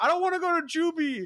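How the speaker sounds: mock, shrill, very high little-kid screaming voice. Retelling a kid locked in the basement, imitating a kid screaming. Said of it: "He kept like screaming that over and over again".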